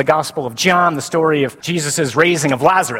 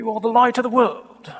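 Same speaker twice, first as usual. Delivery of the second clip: put-on rather stuffy stagey Shakespearean accent, raised pitch; 7 semitones higher than usual. Retelling a movie about Jesus where a man shows up, stuffy Shakespearean accent. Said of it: "shows up with a Shakespearean accent. And rather stuffy".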